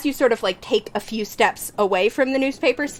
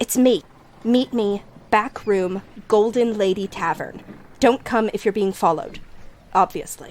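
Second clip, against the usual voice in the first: hushed, quiet character voice. Game master voicing Shiloh through the mouth of a fish, just above a whisper. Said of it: "like kind of just above a whisper".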